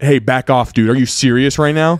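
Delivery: fed-up, angry telling-off tone. Reading a listener's story aloud, retelling what he said: imitating an angry tone. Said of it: "I said in an angry tone".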